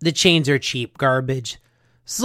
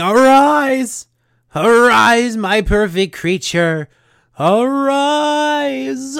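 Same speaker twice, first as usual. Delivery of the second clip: put-on high, very slow mad-scientist yell, arise stretched; 8 semitones higher than usual. Narrating a fight scene, the speaker acts out Mindbender yelling like Dr. Frankenstein. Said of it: "He's just yelling".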